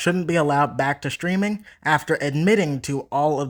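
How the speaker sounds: ordinary talk, nothing marked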